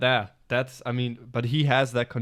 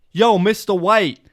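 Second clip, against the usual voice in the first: put-on young slacker voice, higher and louder; 8 semitones higher, 10 dB louder than usual. Trying a Jesse impression: Jesse impression. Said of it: "let me try Jesse".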